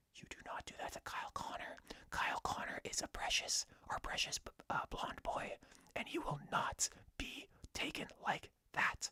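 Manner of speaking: soft, breathy whisper, close to the ear. Retelling what one player said to another after a penalty: imitating a whisper. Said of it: "whispering in his ear".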